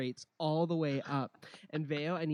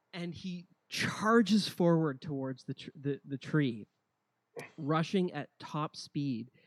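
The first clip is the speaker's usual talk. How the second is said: normal talking voice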